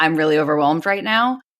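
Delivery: ordinary talk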